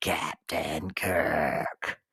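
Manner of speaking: very deep, low, rasping call. Recalling the lizard man calling out: raspy Gorn voice. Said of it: "his raspy voice calling out".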